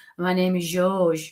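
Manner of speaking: slow, exaggerated put-on French accent, laid on thick. Describing how a joking gentleman talks: mocking French accent. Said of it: "It does sound very French, but it's like it's like taking the Michael out of it".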